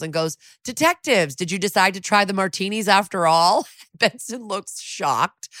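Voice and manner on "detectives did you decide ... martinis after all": high, beaming, cheery voice, all smiles. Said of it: "all smiles".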